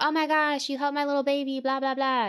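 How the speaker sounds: put-on Southern belle accent. Retelling what a boss said to her, imitating a Southern belle. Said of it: "she was like this Southern".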